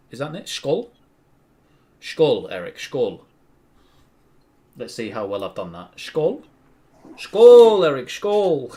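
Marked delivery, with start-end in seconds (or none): 5.9-8.7 shrill, very loud, high, drawn-out yell. Toasting Eric with a Swedish word: shouting. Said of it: "Stop shouting that".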